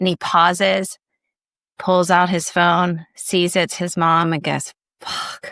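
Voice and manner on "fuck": barely audible, very quiet mutter under the breath. Retelling a stand-up bit, imitating a curse under his breath. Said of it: "under his breath".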